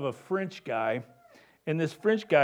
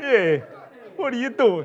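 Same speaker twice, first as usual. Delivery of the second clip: put-on a touch of Jersey Italian accent; 7 semitones higher, 5 dB louder than usual. Trying out accents that keep drifting, the speaker slips into a little jersey accent. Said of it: "A little Jersey in there".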